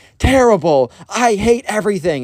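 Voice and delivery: very high-pitched sulky, grumpy moan. Retelling how Ben answered a friendly greeting; imitating grumpy Ben. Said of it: "Ben is in the worst mood ever".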